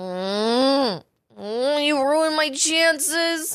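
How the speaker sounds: imitated sleep-talk mumble. Retelling own words said half asleep: imitating own sleep-talking. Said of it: "this person's definitely asleep".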